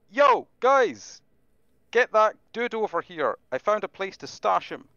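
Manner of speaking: very high, loud, yelled-out call. Calling out to companions from a cave, staff held like a microphone: yelling in character. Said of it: "and just yell".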